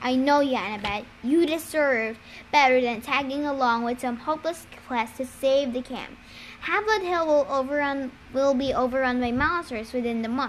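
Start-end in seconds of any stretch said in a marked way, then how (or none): none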